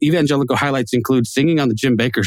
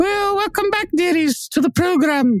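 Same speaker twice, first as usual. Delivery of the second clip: very high, caricatured put-on woman voice. Opening the podcast episode in a put-on voice: female Groundskeeper Willie voice. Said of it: "a female version of the, of, of, of groundskeeper Willie".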